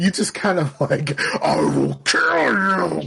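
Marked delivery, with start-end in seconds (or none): 1.4-3.1 put-on angry voice, words forced through teeth. Retelling an angry mother's threat through a closed door: imitating someone talking through teeth. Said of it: "She was talking through her teeth".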